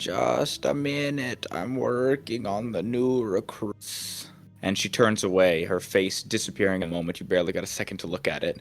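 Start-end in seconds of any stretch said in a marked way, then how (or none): 0.0-4.3 slow, hoarse, raspy whisper. Narrator voicing a woman turning her head to speak, raspy whispery voice. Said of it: "a sort of raspy, whispery voice comes out of her as she goes".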